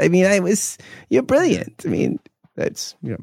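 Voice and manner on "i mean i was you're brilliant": put-on voice of god, pitched higher. Picturing God speaking to someone: Woody Allen voice. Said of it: "picture, like, God as, like, Woody Allen".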